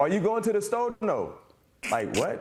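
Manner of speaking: New Orleans accent. Showing how people in New Orleans ask and answer: New Orleans accent. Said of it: "I know how to do a New Orleans accent".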